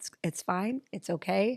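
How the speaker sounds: put-on soft whisper. Retelling grabbing someone's arm to reassure them: imitating a soft whisper. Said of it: "I just whispered softly".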